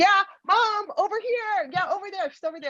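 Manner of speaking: calling out, pitched high.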